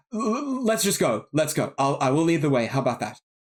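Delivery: frightened, hurried, fast, panicky tone. Adafire, growing afraid of goblin voices, urges the group on: panicked. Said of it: "starting to look a bit panicked".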